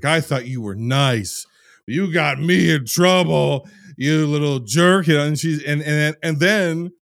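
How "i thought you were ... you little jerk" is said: mock drunken yelling, higher and louder. Retelling a scene where a drunk man yells at her, imitating drunk yelling. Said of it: "And he's yelling at her".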